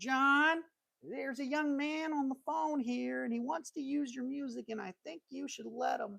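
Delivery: woman's voice, pitched very high. Retelling a phone call, quoting the man's wife in an imitated woman's voice. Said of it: "Sorry, I had to do her voice".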